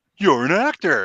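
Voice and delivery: plain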